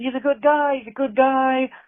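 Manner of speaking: put-on acted-out, very high, sloppy slurred drunken rambling. Retelling a man reminding the boss how they met: imitating slurred speech. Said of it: "he's like slurring his words as he's doing this".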